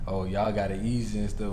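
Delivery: ordinary talk, nothing marked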